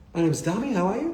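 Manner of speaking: upward question lilt, pitch rising on "you". Voice coaching on how to ask questions: rising pitch on you. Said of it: "end with an upward intonality".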